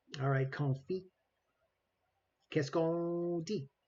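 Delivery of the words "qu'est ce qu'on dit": French-accented, put on. Speaking French words, then asking whether others like it: put-on French accent. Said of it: "You like my French accent?".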